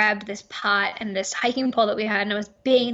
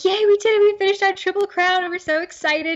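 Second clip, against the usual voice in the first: mock very high, very loud, teary-eyed cheer; 10 semitones higher, 4 dB louder than usual. Retelling reaching the end of a long hike: retelling an emotional teary cheer. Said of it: "we're all teary-eyed, and we're so emotional".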